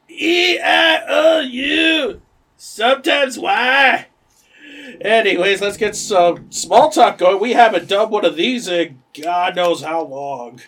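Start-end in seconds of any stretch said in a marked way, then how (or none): 0.2-4.1 put-on very high, slurred-drunk Scottish accent. Explaining to the others which bit you are doing, you perform it in a Robin Williams drunk Scottish voice. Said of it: "Where the Scottish is drunk".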